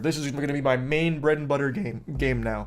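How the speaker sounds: voice cracking and breaking. Talking about how people responded to a game, the speaker's voice cracks. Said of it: "I just had a voice crack".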